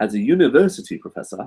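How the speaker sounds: terrible, bad, put-on English accent. Reading out a question from Jackson's list in a terrible put-on English accent. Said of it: "I'll read it in English accent".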